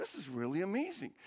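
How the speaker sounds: acted-out whisper. Retelling how someone whispered to the person next to him: retelling a whisper. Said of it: "he whispers to the person next to him".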